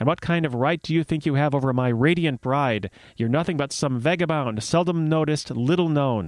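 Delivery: ordinary delivery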